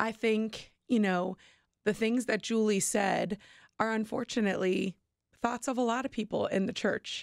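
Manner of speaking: voice still slightly choked up. Given a chance to speak after feeling overwhelmed, a little choked up. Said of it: "I am a little choked up still".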